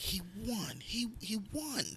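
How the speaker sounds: put-on very high, slow, tearful sob-talk. Retelling waking at night to a wife crying in bed: imitating someone crying. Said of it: "she's sitting there crying".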